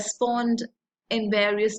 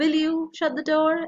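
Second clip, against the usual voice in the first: rising, questioning tone on "door"; 7 semitones higher than usual. Contrasting a request with a question: rising tone at door. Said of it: "It's like rising tone".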